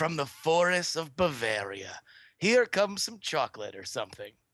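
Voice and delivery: grand, sweeping, swooping epic advertising voice. Explaining why chocolate seems better, the speaker pitches it in an epic sales voice. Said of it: "You can't just say something in an epic sales voice".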